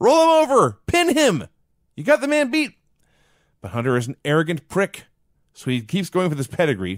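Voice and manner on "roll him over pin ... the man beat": high, loud screaming. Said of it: "he starts screaming at Hunter".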